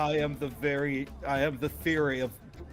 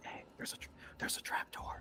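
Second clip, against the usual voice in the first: very quiet, hushed, breathy whisper. Voicing a caped character who points out a trap door: character whispering. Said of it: "he whispers".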